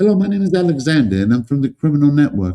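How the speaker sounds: put-on English accent. Retelling how they greeted people at the door, in an English accent. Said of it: "I have all the English accent".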